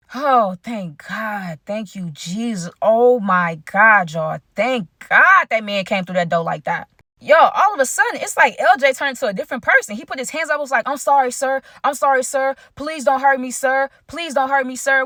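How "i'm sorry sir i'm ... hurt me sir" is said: play-acted scared, childlike pleading like a little kid. Retelling how a man begged an armed host: imitating a scared childlike plea. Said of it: "His whole voice changed".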